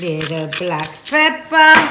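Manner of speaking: put-on, mock Italian accent.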